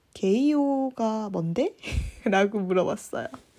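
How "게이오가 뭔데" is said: slow, puzzled, questioning tone. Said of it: "어리둥절하면서".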